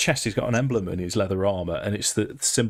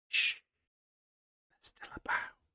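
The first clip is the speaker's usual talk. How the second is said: rushed, quick, hushed elf-voice whispered shush. Game master voicing an elf who looks around as the players approach, hushed whisper. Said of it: "this elf looks around as you approach, and will just go".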